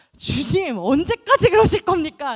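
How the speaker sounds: high, loud, brazen and defiant tone.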